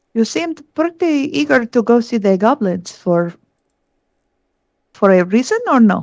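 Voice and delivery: hushed, confidential, private-sounding tone. A player's character closes the door and asks a companion something, in a hushed tone. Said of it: "I will try to say in a hushed tone".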